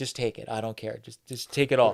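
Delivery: whispered. Retelling a lady urging the speaker to take everything: imitating a whisper. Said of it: "whispering to me when he was".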